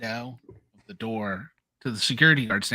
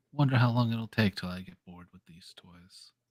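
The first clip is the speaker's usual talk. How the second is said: deep, low, calm tone; 3 semitones lower than usual. A player voices their character's line during a dice game, in a deep, calm voice. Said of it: "deep, calm voice".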